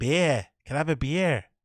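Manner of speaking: put-on slight Boston accent. Speaker imitating how a man pronounces beer: a bit Bostony accent. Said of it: "it's a bit Bostony the way he sounds".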